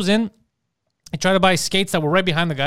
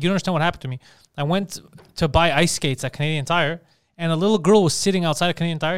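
ordinary talk, nothing marked

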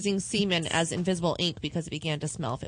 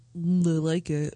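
creepy voice and delivery; 3 dB louder than usual. Trying to beat the other's creepy take on the line: creepy voice. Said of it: "To be creepier than that?".

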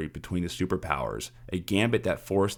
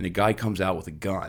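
ordinary talk, nothing marked

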